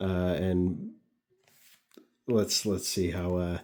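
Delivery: plain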